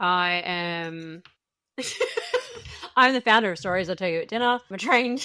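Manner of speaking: helpless laughter and giggling through words, "am" drawn out. Introducing herself to the group, laughing while talking. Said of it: "Why can't I do this without laughing?".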